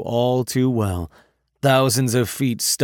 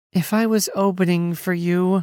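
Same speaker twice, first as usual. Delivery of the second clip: drawn-out, high, slow whine; 7 semitones higher than usual. Reading a story, a character complains to the narrator: whining. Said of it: "Georgia whined".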